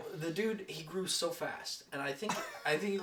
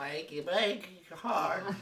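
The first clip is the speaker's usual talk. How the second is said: put-on senile, doddering old man voice. Joking about achy breaky hips, put-on senile old man voice. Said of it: "saying it like a senile old man".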